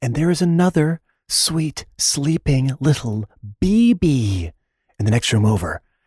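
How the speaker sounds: hushed, quiet whisper. Matt greets everyone while a baby sleeps in the next room: whispering. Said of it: "I am whispering once again".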